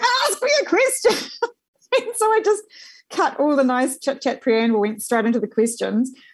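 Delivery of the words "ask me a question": very high, acted-out impatient yell. Retelling how a woman being interviewed started yelling at the speaker, retelling a yell. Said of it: "she starts yelling at me and going".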